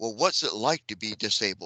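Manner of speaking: condescending, patronizing, talking-down tone. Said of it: "not condescending, like, ... Like you're looking down upon them".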